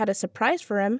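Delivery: ordinary delivery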